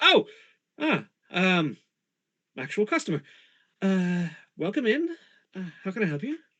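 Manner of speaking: caught off guard. Voicing a shopkeeper interrupted while reading by a customer: startled. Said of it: "Sorry I startled you".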